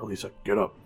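hushed whisper. Waking a sleeping companion in character: whispering.

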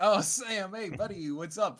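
put-on loose, approximate Brooklyn accent. Voicing a character greeting sam, in a kind of brooklyn accent. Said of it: "a kind of a Brooklyn accent?".

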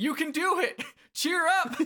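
play-acted moved, earnest, eager cheering, very high-pitched. Acting out a character trying to cheer someone up: mock eager encouragement. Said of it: "she gets so moved by the fact".

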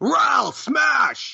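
very high, rough, rasping yell. Acting out a character's battle cry to the party: yelling in character. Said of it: "I yell".

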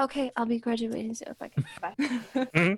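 really hushed, under the breath, barely audible. A character speaks while walking away from the others, very quiet. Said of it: "She says it like really quietly".

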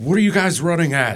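very high-pitched, loud shouting. Playing Mark, who looks at the group running at him and yells at them. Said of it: "Mark looks at all of them and just yells".

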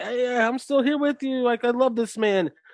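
pleading, begging tone. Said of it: "begging Roman to be like".

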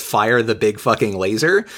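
ordinary delivery

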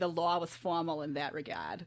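put-on Boston accent through the whole line. Showing the phrase for getting into an accent, in a Boston accent. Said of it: "the way you can get into a Boston accent is to say".

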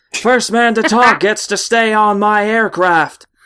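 put-on American accent. Quoting a line from a meme, in a put-on american accent. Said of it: "This is an American accent".

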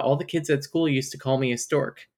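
ordinary delivery

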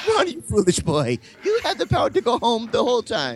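slightly Irish, sing-song lilt, high and swooping pitch. Voicing Gwendolyn, addressing a boy: Gwendolyn voice, kind of Irish. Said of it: "Gwendolyn sounded kind of Irish there".

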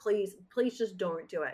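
mock pleading tone. Retelling a scene where a character begs another not to do it: imitating someone pleading. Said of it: "pleading with him not to do it".

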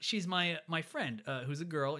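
plain

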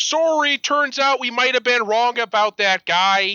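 very high-pitched attempted Philly accent. Repeating a quote after admitting they can't do the accent, attempted philly accent. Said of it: "I can't do a Philly accent".

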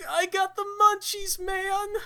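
high-pitched cartoon dude voice. Speaker describing a Scooby-Doo jar, reading what it says in Shaggy voice. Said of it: "in the Shaggy voice".

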